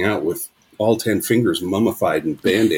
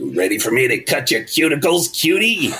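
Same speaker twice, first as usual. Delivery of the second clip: deep raspy smoker's voice, pitched up; 5 semitones higher than usual. Retelling a comedy story about a nail salon lady: imitating a precancerous smoker's voice. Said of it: "Her voice is so deeply precancerous".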